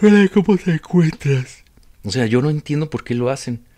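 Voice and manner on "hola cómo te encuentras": loud, high-pitched speech spoken through a yawn. Mocking people who yawn and talk at once: spoken through a yawn. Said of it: "ese que bosteza y habla al mismo tiempo ... Así como".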